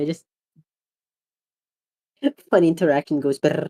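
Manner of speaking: laughing while talking, words coming through laughter. Apologizing for laughing at a funny interaction: laughing while talking. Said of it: "this is a terrible situation to be laughing".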